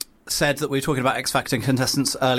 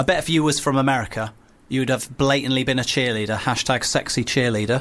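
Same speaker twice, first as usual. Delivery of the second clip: plain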